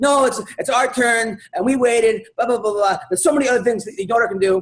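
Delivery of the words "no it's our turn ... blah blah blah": mock woman's scream, higher-pitched and much slower. Recounting a woman's outburst over whose turn it was: imitating a woman screaming. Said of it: "this woman just starts screaming".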